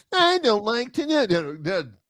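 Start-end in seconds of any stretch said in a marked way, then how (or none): 0.1-1.0 small, high, whining little voice. Demonstrating a negotiating tool: little whiny voice. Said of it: "the little whiny voice".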